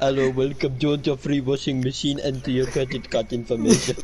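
put-on Indian call-center accent. Joking about al working in an indian call center, put-on indian call-center accent. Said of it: "Could you imagine Al in one of them Indian call centers?".

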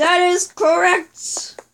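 horribly done, high cartoon character voice. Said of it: "the most horrible impression ever".

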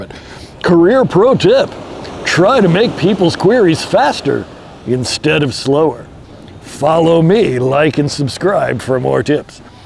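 heavy sarcasm, mocking, faux-helpful tone. Speaker answering a question for viewers, being sarcastic. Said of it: "I'm like going to be sarcastic here".

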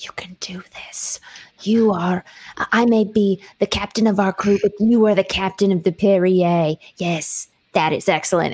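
hushed whisper. A character walks up behind a crewmate to encourage him, whispering in his ear. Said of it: "whisper in his ear".

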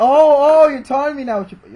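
high, loud, outraged yell.

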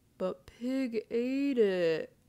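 very slow, drawn-out whiny voice. Turtle argues with Rooster, Pig and Iguana about the dropped shortcake: whined. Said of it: "whined Turtle".

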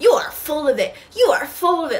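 mock screaming, high-pitched. Retelling how she shouted at a caller on the phone, retelling her screaming. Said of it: "like screaming".

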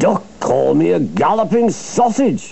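high, spluttering outburst, like an engine. Reading a story aloud, spluttering as Gordon. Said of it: "spluttered Gordon".

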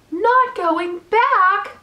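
loud, high-pitched, cried-out exclamation. Wilbur leaps up after Charlotte says she won't return to the barn; crying out. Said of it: "he cried".

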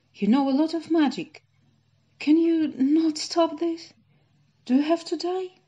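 very high loud outcry. You are King Arthur, answering Merlin, who must go into a cave forever, crying out. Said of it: "King Arthur cried".

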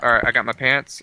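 usual speaking voice

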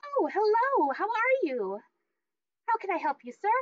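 perky, bubbly, very high sing-song chirp. Playing the woman at the booth greeting a customer, in a bubbly voice. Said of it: "She kind of turns kind of bubbly".

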